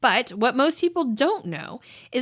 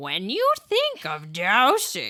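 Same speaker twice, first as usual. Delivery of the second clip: put-on swooping witchy old lady voice; 4 semitones lower than usual. Trying a scary voice for Halloween, witchy voice. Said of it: "Should I try to do like a witchy voice?".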